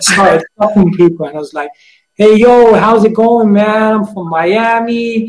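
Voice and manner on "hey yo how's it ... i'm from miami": very slow, not-so-good put-on American accent. Retelling talking to people as someone from Miami, in a put-on American accent. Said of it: "start doing American accents".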